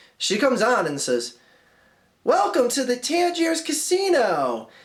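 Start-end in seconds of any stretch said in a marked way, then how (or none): 2.2-4.6 grand casino-show announcer delivery, pitched up. Quoting a scene's female announcer, showy announcer voice. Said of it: "that tenor in my voice there, like, that's like the way she talks".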